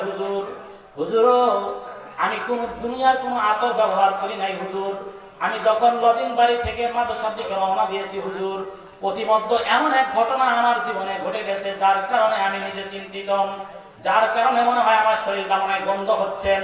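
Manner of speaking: normal talking voice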